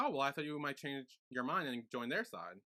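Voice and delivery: plain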